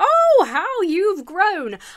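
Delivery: put-on high, very slow, stretched-out Southern US accent. Imitating Missus Wadley greeting the characters: Southern US accent as Missus Wadley. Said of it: "Southern U S for some reason".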